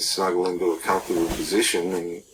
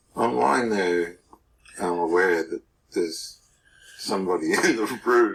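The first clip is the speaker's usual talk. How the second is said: talking through bursts of laughter; 3 semitones higher than usual. Recounting a night lying beside mother, laughing while talking. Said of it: "Sorry for laughing".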